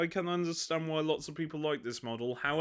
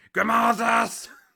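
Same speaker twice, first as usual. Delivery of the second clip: loud, raw, hoarse shouting voice; 7 semitones higher, 10 dB louder than usual. Speaker imitates an audiobook character's voice: put-on hoarse shouting voice. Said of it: "his voice was racked from years of shouting".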